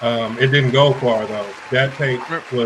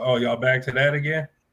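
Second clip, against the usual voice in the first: ordinary talk, nothing marked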